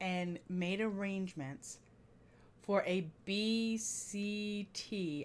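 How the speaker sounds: very slow, soft, deliberate spelling-out, letter by letter. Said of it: "I had to say that slowly and carefully".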